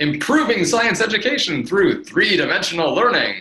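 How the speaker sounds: enthusiastic. Showing the host how a website statement should be said, with more gusto. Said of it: "you have to say that with more gusto".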